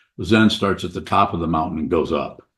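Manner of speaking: ordinary delivery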